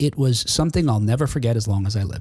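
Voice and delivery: ordinary talk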